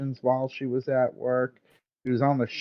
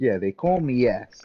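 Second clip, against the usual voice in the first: put-on Italian-accented voice. Imagining another speaker with an Italian accent. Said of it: "Imagine he just had an Italian accent".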